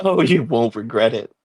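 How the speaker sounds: grinning, beaming delivery. Voicing a character who grins after nodding gratefully: grinning. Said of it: "goes back to her wide grin".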